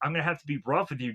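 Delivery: put-on voice, dropped way down, very deep. Retelling Peter talking to Joey, in a deep Peter voice. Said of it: "Peter really has a really deep voice here. So I have to make an imitation of him".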